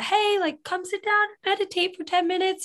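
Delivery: high, acted yelling out.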